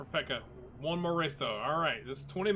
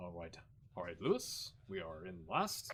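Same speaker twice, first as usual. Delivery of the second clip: calm, proper race engineer voice, lower and quieter; 9 semitones lower, 8 dB quieter than usual. Imitating Bono talking to Hamilton over the radio: imitating Bono, proper and calm. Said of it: "all proper and, you know, calm".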